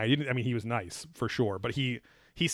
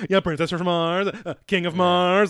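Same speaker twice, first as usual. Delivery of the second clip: mock eager, all-excited, high and raised voice; 6 semitones higher, 6 dB louder than usual. Retelling someone's reply to another person's remark, acting all excited. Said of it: "like all excited".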